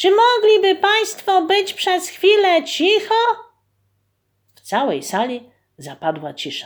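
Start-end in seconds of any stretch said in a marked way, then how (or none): 0.0-3.1 very high, shrill, loud shout. Kuba stands up straight and shouts loudly to the people seated around him. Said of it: "krzyknął głośno do siedzących".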